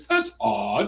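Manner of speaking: put-on British accent. Retelling a woman's reaction at feminist meetings: british accent. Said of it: "in a British voice".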